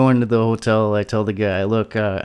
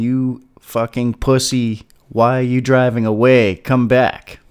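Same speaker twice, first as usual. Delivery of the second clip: put-on, called-out yell; 2 semitones higher, 4 dB louder than usual. Retelling yelling at a kid who waved a gun and drove off, retelling a yell. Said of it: "And I even yelled to him".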